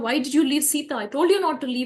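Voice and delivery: acted stunned indignation. Retelling Rama meeting Lakshmana halfway and questioning him: acting out angry shock. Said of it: "he's angry, he's also shocked".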